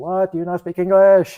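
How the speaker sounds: very high, very loud, shrill put-on Arabic accent. Retelling how a man answered back over the radio: imitating an arabic accent. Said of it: "he's talking like he's Arabic".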